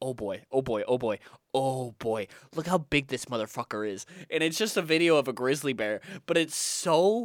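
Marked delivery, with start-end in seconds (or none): 0.0-4.0 deep, low, excited and thrilled marvelling. Retelling a funny video about a grizzly bear, imitating excited Joe Rogan. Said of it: "seeing how excited he gets about the grizzly bear".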